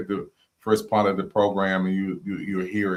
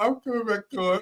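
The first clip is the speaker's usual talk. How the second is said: mock three-year-old girl voice, higher pitched; 13 semitones higher than usual. Imitating another speaker's promise to come back: imitating a little girl voice. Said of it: "like, three years old".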